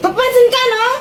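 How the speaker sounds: high-pitched, irritated, snappish tone.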